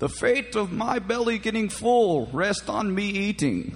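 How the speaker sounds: drawn-out villain voice. Retelling a line said to Josh while walking to eat: Bane voice. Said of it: "we were doing our Bane voice all day".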